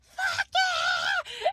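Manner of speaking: piercing, very high, shrill screech. Acting out how a woman yelled when he opened the door, retelling her scream. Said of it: "she's like screaming".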